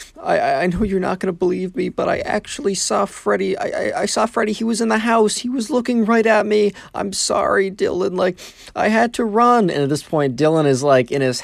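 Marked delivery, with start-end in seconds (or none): 0.2-9.7 crying, very high, tearful, voice catching and breaking. Retelling a story, speaking Ben's words to Dylan, imitating Ben choking up in tears. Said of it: "through like kind of like tears and kind of choking up".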